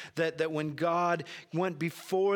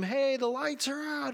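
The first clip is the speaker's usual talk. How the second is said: bad put-on kids' screaming, much higher; 9 semitones higher than usual. Speaker recalls their kids when the lights went out, bad impression of kids screaming. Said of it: "scream, ... that's a really bad impression".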